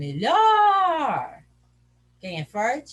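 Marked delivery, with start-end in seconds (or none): 0.0-1.4 melhor called out, -lhor stretched long. Portuguese lesson on the strong syllable: calling out melhor, stretching lhor. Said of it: "chama longe a palavra, como se a palavra fosse alguém que você estivesse chamando".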